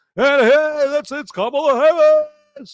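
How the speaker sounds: shrill, very high, stretched-out yell. Act out Oprah Winfrey on there the whole night, imitating Oprah Winfrey yelling. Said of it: "just yelling like this".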